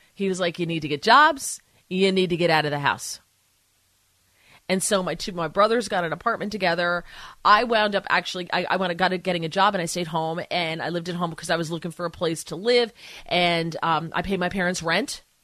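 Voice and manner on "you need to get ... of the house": dead-serious, stern, no-joke tone. Retelling the father's breakfast talk telling grown kids to leave: imitating father, dead serious. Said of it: "And he was dead serious".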